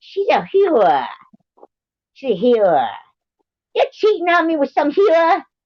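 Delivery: very high put-on Italian accent in a woman's voice. Showing how they'd imitate an Italian woman: put-on Italian accent. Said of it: "If I was gonna do like an Italian woman, I'd be like".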